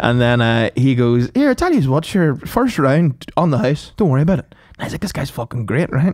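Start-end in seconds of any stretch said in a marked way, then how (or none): 1.3-4.5 put-on accent from Ballymena. Retelling what a man said to the speaker; thick Ballymena accent. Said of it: "the thickest Ballymena accent I've ever heard".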